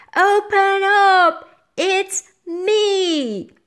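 very high, loud, slow shout, word me stretched. Reading a story, a young witch at the door: shouted. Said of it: "a young witch shouted at the door".

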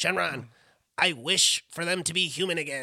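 put-on cartoon character voice. Retelling an anime scene to a friend, doing a Krillin voice. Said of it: "that's a good Krillin voice".

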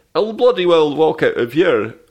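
put-on loud, high yell in a Scottish accent. Retelling a scene, quoting MacLeod's reply in a Scottish accent. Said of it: "Your accent's too good".

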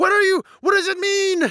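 yelled, very high-pitched. Retelling being grabbed by the arms by a tall blonde woman: imitating someone yelling. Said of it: "being yelled".

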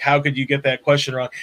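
ordinary delivery

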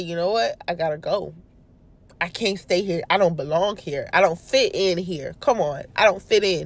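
plain

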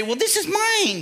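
very high, put-on girlish voice. Acting out how withholding what God gave sounds to God, in a girly voice. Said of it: "I hate the girly voice that I got to use".

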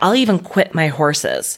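plain

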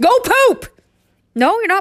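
shrill, very high yell. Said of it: "living with pets. Very much like having Tourette's".

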